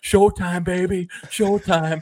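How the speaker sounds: put-on, high hollering yell. Speaker retells a player yelling at the fans: retelling a yell at fans. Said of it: "he's yelling at the fans".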